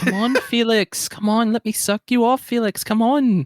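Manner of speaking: put-on Irish accent, very high. Parodying a film character calling out to Felix, doing an Irish accent. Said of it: "y'all just doing Irish accents".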